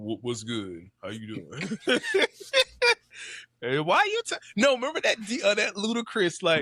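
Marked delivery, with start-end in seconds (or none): 0.0-4.2 put-on seductive voice.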